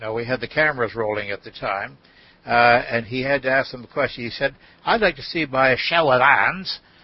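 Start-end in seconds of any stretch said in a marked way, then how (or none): 4.8-6.8 attempted Australian accent. Retelling what a man asked a group while cameras rolled, in an Australian accent. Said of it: "I'm trying to do my Australian accent here".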